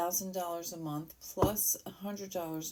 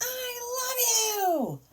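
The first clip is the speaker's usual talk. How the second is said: very high, shrill, shrieking, high-pitched scream; 8 dB louder than usual. Retelling what a woman did on body cam: imitating someone screaming.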